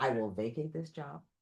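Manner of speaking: very quiet, hushed speech. Retelling how her husband quietly goes over to a yeller at work, quiet. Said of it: "he very quietly will go over to the yeller and go".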